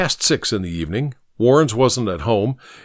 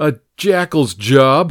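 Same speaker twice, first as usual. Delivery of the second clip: contemptuous, scornful, sneering jab; 2 semitones higher, 4 dB louder than usual. Narrator voicing Harry's friend replying to him, sneering. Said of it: "the friend sneered".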